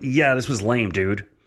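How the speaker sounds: ordinary delivery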